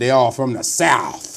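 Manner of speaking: put-on Southern accent. Talking college football, one host mimics the other's accent; mock Southern accent. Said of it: "This dude finna up there marking my accent".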